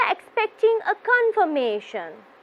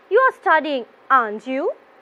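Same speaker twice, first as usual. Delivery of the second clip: rising pitch on aren't you; 3 semitones lower, 4 dB louder than usual. Intonation lesson, tag question asked with doubt: rising intonation on aren't you. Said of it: "My voice will be going up towards the end of my question".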